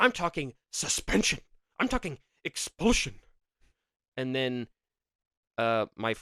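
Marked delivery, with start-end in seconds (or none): 0.0-3.1 mock furious, stern and angry, pitched up. Retelling a class meeting about stink bombs, imitating someone very mad. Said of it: "he was, like, so mad".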